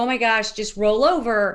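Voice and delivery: ordinary talk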